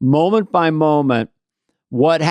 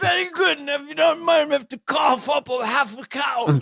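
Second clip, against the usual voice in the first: put-on royal father voice, mock regal; 12 semitones higher, 6 dB quieter than usual. Acting out the royal father answering his son about Meghan, impression of a royal father. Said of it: "sounded like Bill Cosby when you did Prince".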